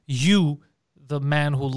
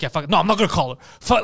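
mock worked-up, defiant, aggressive, fed-up, dismissive outburst; 3 semitones higher, 4 dB louder than usual. Retelling a friend's refusal to call her: imitating someone getting aggressive. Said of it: "he was getting all aggressive".

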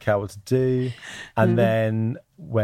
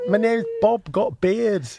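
put-on Yorkshire accent, much higher; 12 semitones higher than usual. Introducing a made-up character to the others, in a Yorkshire accent. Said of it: "I was doing Yorkshire accent".

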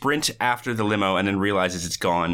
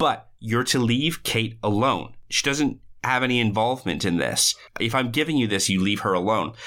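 ordinary talk, nothing marked

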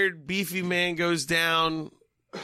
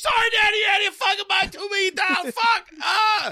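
put-on screaming voice, higher and louder; 5 dB louder than usual. Retelling a movie character yelling at his son: imitating Vincenzo screaming. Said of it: "He was screaming".

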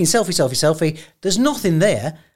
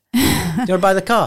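put-on laughing, half-joking, half-serious tone; 3 semitones higher than usual. Retelling offering strangers the car: retelling a laughing, half-serious offer. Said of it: "I said it, like, laughing, but, uh, half serious".

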